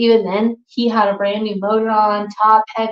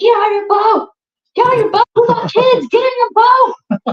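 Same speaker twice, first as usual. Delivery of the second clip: very high, shrill screaming; 13 semitones higher, 4 dB louder than usual. Retelling a kayak accident, imitating screaming at him to leave the boat. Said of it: "I screamed at him".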